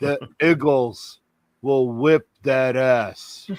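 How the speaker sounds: a deep, soft, grand announcer voice. Making his Giants-Eagles pick, in his John Facenda voice-of-God impression. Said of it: "in my best non John Facenda voice".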